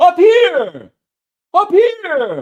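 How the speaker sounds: very loud, very high, swooping call. Reading a story aloud, a young man's voice calls out, young man shouting.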